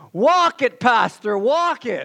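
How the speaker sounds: high-pitched, loud yelling voice. Telling a joke about a preacher, the speaker voices someone retelling a yell from the back. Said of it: "a voice from the back yells".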